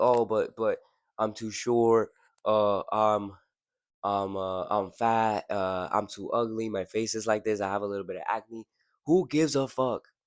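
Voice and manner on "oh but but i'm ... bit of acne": hesitant, halting, insecure delivery. Imitating men who argue back: imitating an insecure man. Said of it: "I hate when men talk like this".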